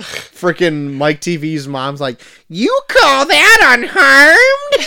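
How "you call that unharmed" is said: put-on shrill, very high, loud, weird Midwestern accent. Discussing a movie's characters, speaker does a Mike Teavee's mom impression. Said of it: "like almost like a weird Midwestern accent".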